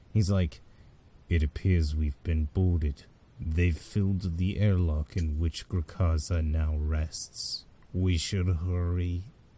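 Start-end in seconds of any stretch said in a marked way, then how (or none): 1.3-9.2 low, far-off, very deep voice. Voicing a character who talks to you for the first time: distant, very deep voice. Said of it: "his voice is really distant, but also very deep".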